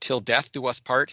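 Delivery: ordinary delivery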